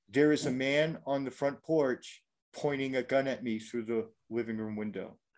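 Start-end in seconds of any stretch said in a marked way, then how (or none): none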